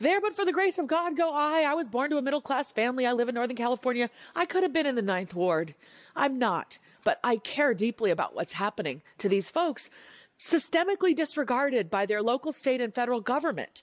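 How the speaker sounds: high, rising, impassioned voice.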